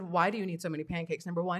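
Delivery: ordinary delivery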